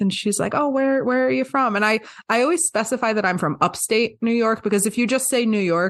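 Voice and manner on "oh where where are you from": put-on thick Southern US drawl, pitched up. Retelling a beach stranger's remark: imitating thick Southern US accent. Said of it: "in the thickest, like, Southern U S accent".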